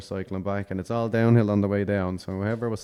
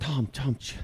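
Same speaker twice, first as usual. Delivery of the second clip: put-on breathless, out-of-breath voice, higher pitch; 5 semitones higher, 3 dB quieter than usual. Retelling a friend's breathless phone call: imitating someone out of breath. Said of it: "he was kind of out of breath".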